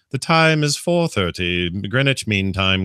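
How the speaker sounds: dry, put-on newsreader voice. Suggesting a fun content style to a BBC fan, dry BBC News voice. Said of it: "one of those dry freaking B B C News".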